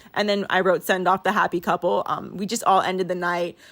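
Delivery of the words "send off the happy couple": ordinary talk, nothing marked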